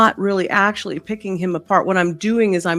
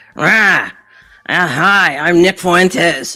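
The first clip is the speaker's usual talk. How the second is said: put-on elderly man voice; 7 dB louder than usual. Doing an impression of Nick Fuentes for the viewers: Nick Fuentes impression. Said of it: "If I was to do this guy".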